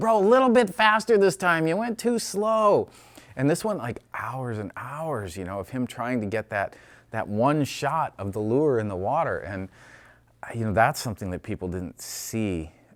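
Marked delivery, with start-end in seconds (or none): 0.0-2.9 put-on very shrill, high, loud shouting. Act out the man popping his head up from underwater to get the lure shot, imitating a man yelling. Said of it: "he would be yelling at me about this".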